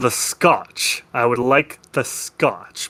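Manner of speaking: grumbling, half-growled, under the breath. Voicing a gruff bar patron ordering a drink: half growling to himself. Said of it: "sort of half growls to himself and says".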